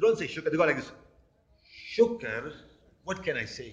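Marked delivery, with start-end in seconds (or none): 2.0-3.7 play-acted gloomy, miserable, low, slow mutter. Mimicking how religious people answer when asked how they are, mock-miserable 'shukr'. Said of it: "In the word of shukr, they're showing misery".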